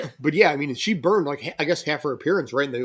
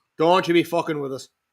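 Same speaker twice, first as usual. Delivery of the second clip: mock drunk Irish accent, higher; 3 semitones higher than usual. Joking with the others on Saint Patrick's Day, in a mock drunk Irish accent. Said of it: "What kind of an accent is that?".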